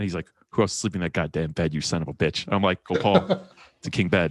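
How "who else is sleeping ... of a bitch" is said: mock frustration in a lower-pitched voice. Retelling Gopal's reaction while helping the speaker look at apartments, imitating frustrated Gopal. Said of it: "he was so frustrated at me".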